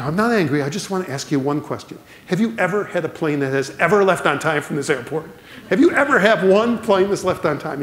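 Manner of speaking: put-on thick sarcasm, deliberately irritating. Telling how a businessman at an airport confronted the gate agent, imitating sarcastic businessman. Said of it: "in a very sarcastic voice".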